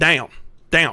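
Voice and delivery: Southern US accent on 'down'. Being coached on an accent by another speaker, repeating the word in a Southern US accent. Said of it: "try to do a southern down".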